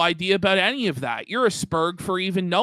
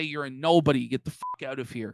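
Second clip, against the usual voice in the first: mock hostile sneer, lower and quieter; 4 semitones lower, 4 dB quieter than usual. Imagining how they would answer a confrontation: imitating a dismissive sneer. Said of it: "They say".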